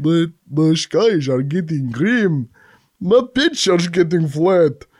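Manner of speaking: accent that comes out Russian. Asked to redo a Swiss accent, the speaker repeats the phrase in a Russian-sounding accent. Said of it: "sounds Russian, doesn't it?".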